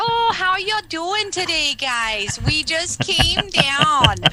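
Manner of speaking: very high, very loud put-on Minnesota accent. Showing how the speaker teases family back home: put-on minnesota accent. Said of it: "do you have the old A in your voice yet... I do when I go home to my family. I like to scare them. I'll be like".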